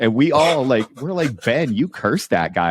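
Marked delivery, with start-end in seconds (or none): none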